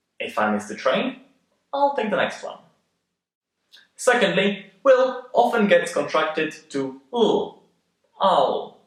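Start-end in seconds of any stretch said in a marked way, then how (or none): 0.2-2.6 short pause right after the word "train". Teaching phrasing of a comma sentence, short pause after 'train'. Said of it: "we usually pause for a little bit between these two sentences".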